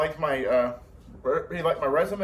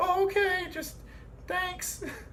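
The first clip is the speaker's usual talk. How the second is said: terrible put-on woman's voice, very high pitched; 4 dB quieter than usual. Retelling the reply to an apology: put-on woman's voice. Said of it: "That's my terrible impression of a woman".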